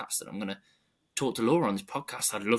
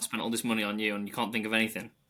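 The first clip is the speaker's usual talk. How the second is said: usual speaking voice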